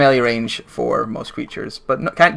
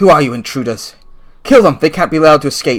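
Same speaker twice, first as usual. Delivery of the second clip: furious, loud, angry barked commanding voice; 3 semitones higher, 5 dB louder than usual. Voicing an archer who fires on the intruders and orders them killed: angry. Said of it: "frowns angrily and like".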